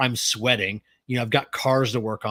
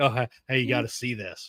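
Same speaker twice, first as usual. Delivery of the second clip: put-on speech broken by laughter, quieter; 6 dB quieter than usual. Retelling coworkers interrupting work to show a video: imitating coworkers laughing while talking. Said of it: "they'll walk over laughing, like".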